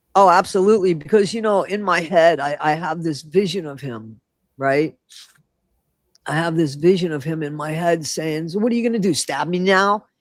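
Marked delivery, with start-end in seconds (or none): 8.5-10.0 nonchalant, offhand, totally unbothered tone. Imagining what he says to his son, Archie Bunker type way. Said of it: "almost like, uh, Archie Bunker type way, that nonchalant type way".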